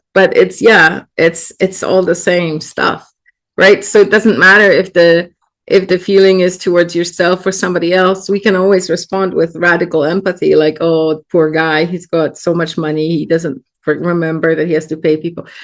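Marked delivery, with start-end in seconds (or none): none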